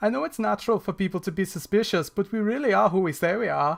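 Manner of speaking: put-on Swedish accent. Gamer reading a character's dialogue aloud, in a Swedish accent. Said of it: "you get to hear my Swedish accent".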